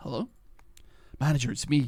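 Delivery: out of breath. A caller phones the manager at a late hour, out of breath. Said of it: "You sound out of breath".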